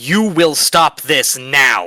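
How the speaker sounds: slow, full-volume shout at the top of the lungs. Tabletop player speaking as his character beside a dead companion, shouting at the top of lungs. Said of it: "at the top of his lungs shout".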